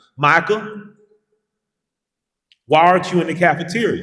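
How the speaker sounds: put-on country accent. Retelling how the principal spoke to you, imitating Doctor Hill's country accent. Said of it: "he talked with a country accent".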